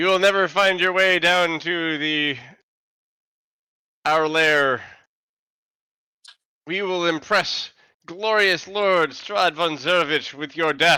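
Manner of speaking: skull voice with cackling throughout. Narrating a scene where a skull speaks to the party, cackling skull voice. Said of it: "The skull cackles".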